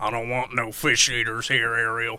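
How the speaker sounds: very low, very soft, hushed deep Southern accent. Picturing Ariel's father talking to her, in a deep Southern accent. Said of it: "with like a really deep Southern accent".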